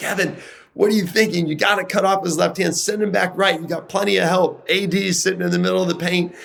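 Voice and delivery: play-acted, very high-pitched yelling. Retelling yelling at a player during a timeout: retelling own past yelling. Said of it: "I'm yelling at Kevin".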